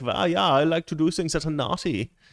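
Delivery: high, purring, creepy German man accent.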